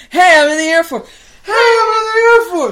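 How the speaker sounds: very high, very loud, thrilled, excited hollering. Retelling how he ran into the theater shouting it; retelling an excited shout. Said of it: "shouting it".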